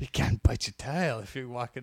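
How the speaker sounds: growled delivery, like a famous pro wrestler impression. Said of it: "Give us an interview involving a tiger".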